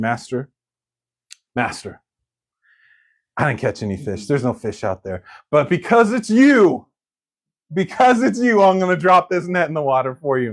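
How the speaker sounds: play-acted indulgent, polite, going-along humoring tone. Retelling a fisherman's reply to Jesus: imitating Peter humoring Jesus. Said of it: "He's humoring Jesus".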